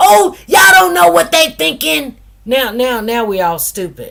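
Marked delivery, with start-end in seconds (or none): 0.0-2.2 losing control, raised, rough, pitched-up outburst. Retelling what a woman in court said: imitating someone raising her voice. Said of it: "why is she raising her voice?".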